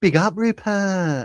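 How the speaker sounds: campy put-on voice. Repeating a shout-out in the same voice he just used; camp voice. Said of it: "That's me being camp".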